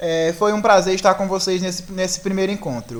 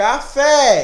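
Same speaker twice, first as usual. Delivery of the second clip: café with fé stressed and lifted high; 5 semitones higher than usual. Portuguese lesson on the stronger, tonic syllable: stress on 'fé' in café. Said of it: "o Fé, ele vai lá no alto".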